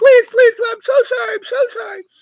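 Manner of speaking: acted, very high, shrill, snivelling, whimpering whine. Telling a story to friends, you act out the frightened man begging again, imitating a whiny plea. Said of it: "he was just a whiny bitch".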